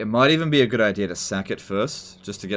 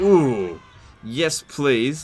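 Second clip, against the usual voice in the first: eager, greedy, high, tempted voice; 5 semitones higher, 3 dB louder than usual. Imitating enemies who can't resist a lone general: imitating eager temptation. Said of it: "They're like".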